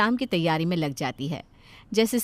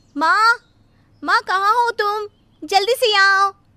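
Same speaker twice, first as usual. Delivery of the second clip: very high, shrill, very loud shout; 13 semitones higher, 8 dB louder than usual. A daughter shouts for her mother to come quickly. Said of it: "क्यों इतना चिल्ला रही है?".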